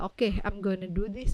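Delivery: ordinary talk, nothing marked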